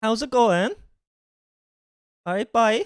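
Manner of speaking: high-pitched, quick-fire local Cork Irish accent. Asking how local people reply, a speaker tries a Cork accent. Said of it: "That's essentially the Cork accent".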